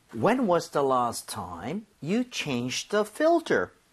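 very slow, careful reading.

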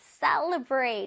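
very slow, stretched-out celebrate with falling pitch.

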